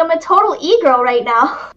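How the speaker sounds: put-on little anime-girl character voice. Showing off that they can sound like a little anime girl. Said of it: "I can sound like a little anime girl".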